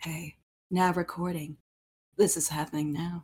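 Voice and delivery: smouldering, sultry, low, soft murmur. Retelling how Byakuya announced the recording had started, mock-sultry Byakuya imitation. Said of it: "Him just saying it all sultry".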